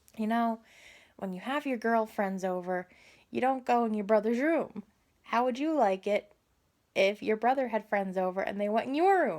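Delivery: ordinary talk, nothing marked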